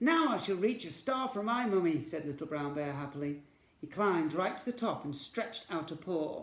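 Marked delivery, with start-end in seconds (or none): none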